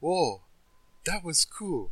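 high, drawn-out, far-off distant-sounding voice. Retelling hearing someone walking away in the distance: imitating a really faint voice. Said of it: "just really faint voice".

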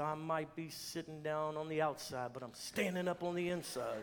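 put-on mutter under breath. Retelling a little boy's reply to his parents: imitating muttering under his breath. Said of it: "he said under his breath".

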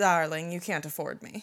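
mock snooty, pretentious diva voice. Retelling turning down a request after tossing hair: put-on pretentious tone. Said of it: "In the most pretentious way possible".

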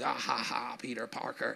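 comic-book supervillain laugh. Retelling a movie line where the Green Goblin laughs at Peter Parker: Green Goblin laughing. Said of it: "And he's laughing".

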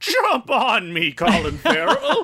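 high, swooping talking-horse voice. Recapping a movie scene, speaking for the horse in a talking horse voice. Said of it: "I was doing that voice too".

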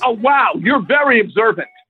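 sarcastic, falsely admiring tone. Answering a remark about being unhappy: sarcastic. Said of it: "I was being sarcastic".

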